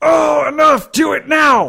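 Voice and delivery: very high, very loud, drawn-out vampire shriek. Voicing a vampire hit by searing light: vampire yelling. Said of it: "light yells out".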